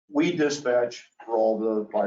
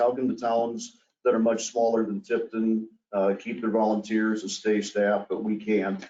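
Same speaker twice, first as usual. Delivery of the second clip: normal talking voice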